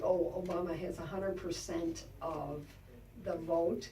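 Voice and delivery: ordinary talk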